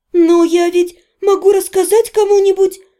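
small timid voice. Narrator as the heroine answering Sebastian, timid. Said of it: "робко заметила я".

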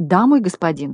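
ordinary delivery

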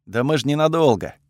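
ordinary delivery, nothing marked

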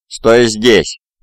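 words growled out. Straightening up behind a companion, he calls to another man; growled. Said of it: "прорычал Хальфвульф".

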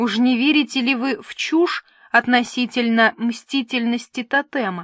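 plain reading voice

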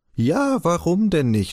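scornful, sneering, high, drawn-out mocking scoff. [name] reacts to a printed piece about Kaspar Hauser, mocking. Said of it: "spottete [name]".

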